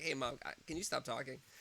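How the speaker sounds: acted blunt, flat, deadpan matter-of-fact tone. Retelling what her toddler said to his mom, imitating matter-of-fact toddler. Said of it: "he was so matter of fact".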